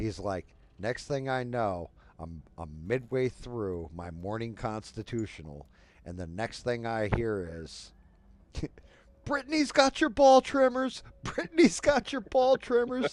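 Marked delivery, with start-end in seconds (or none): 9.2-13.1 alarmed shriek, very high and very loud. Retelling a boy running down the hallway, imitating a boy screaming. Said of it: "screaming at the top of his lung".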